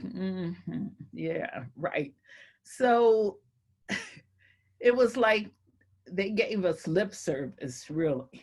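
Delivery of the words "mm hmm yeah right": slow, dismissive, half-listening drawl. Retelling how a man gave them lip service, imitating him talking slow. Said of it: "he was like talking real slow".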